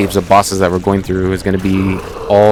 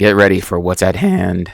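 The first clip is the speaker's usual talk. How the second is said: voice cracking. Narrating a video game playthrough, speaking with a voice crack. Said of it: "Sorry for the voice crack".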